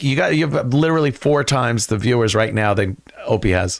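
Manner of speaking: ordinary talk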